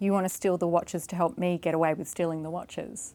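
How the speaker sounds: normal talking voice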